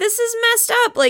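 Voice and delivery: high, shocked, outraged outburst. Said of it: "Clint is very like".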